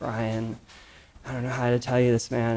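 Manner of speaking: put-on downcast, dejected voice. Retelling a source's phone call to a colleague: imitating John's downcast voice. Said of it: "he just sounds so downcast".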